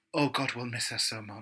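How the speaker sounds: soft, earnest, heartfelt, sincere, mournful voice. Retelling a drag queen's viral video: imitating earnest sadness. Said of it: "she's so earnest and so honest".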